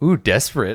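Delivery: laughing mockingly. Voicing ravens who mock a wolf: laughing mockingly. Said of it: "they all, like, laugh".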